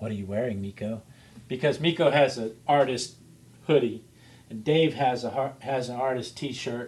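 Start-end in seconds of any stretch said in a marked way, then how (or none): 0.0-1.0 soft, hushed, teasing stage whisper. Retelling teasing someone in the chat room: retelling a half-whisper. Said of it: "I kinda whispered".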